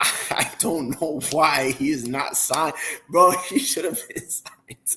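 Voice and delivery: slow, laughing, disbelieving talk through laughter. Complaining that a player has not been signed, laughing while talking. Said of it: "I'm sorry I'm laughing".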